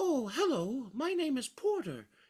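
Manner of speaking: very high, slow, bear-like voice. Actor showing how a character called Porter sounded, Winnie the Pooh-like voice. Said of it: "like it was just like a Pooh Bear".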